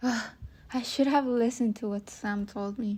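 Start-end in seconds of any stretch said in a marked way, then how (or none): none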